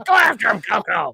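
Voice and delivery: put-on raspy commentator voice. Retelling a wrestling commentator's raspy yelling: imitating Roddy Piper's raspy voice. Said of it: "just 'cause of his raspy voice".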